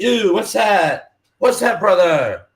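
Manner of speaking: put-on Jamaican-style accent in a radio host voice. Picturing a radio host turning to his partner on the show, Rastafarian dude voice. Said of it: "I just picture like some Rastafarian dude".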